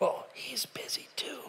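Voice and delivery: hushed, almost soundless, barely-there whisper. Retelling a child answering the phone: imitating a whisper. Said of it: "the kid's whispering all the way through".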